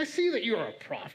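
mock knowing, sarcastic, mocking tone. Reading a Bible line as a friend would say it: sarcastic, in Will's voice. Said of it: "so I hear Will's voice in my head".

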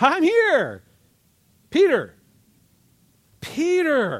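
very high, very slow, drawn-out sing-song call. Retelling how the angel kicks sleeping Peter awake, acting out the angel waking Peter. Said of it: "he nudges him, literally kicks him in the side".

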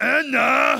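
put-on peculiar, odd-sounding, cross little boy voice. Retelling a child calling to his sister: imitating a strange-sounding child. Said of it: "he kinda sounds strange".

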